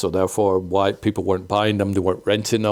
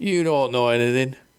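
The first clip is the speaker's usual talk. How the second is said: put-on drunken slurred voice, higher; 4 semitones higher than usual. Retelling what a video rental chain owner told him, imitating drunk slurred voice. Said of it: "There's a bit of a drunky, slurred voice there".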